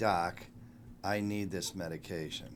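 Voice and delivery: normal talking voice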